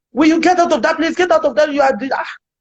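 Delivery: loud high shout. Retelling how a man drove in and shouted at the speaker, imitating a man shouting. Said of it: "he was shouting".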